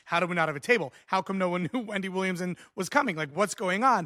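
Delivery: panicked, frantic, disbelieving tone. Retelling a moment with no table ready: retelling own panicked words. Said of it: "sweating, panicking".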